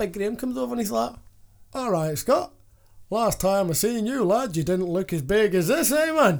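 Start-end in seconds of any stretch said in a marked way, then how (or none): 1.7-6.4 put-on slow, drawn-out Yorkshire man's accent. Retelling how Big Graham came over and spoke to Scott, Big Graham's Yorkshire accent. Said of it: "From Yorkshire".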